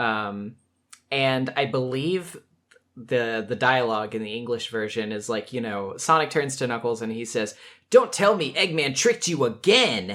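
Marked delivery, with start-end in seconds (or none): 7.9-10.1 high, swooping, blaming, accusatory tone. Quoting the English version, Sonic turns to Knuckles: mock-accusatory Sonic line. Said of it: "it's this very like accusatory".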